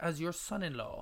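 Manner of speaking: ordinary delivery, nothing marked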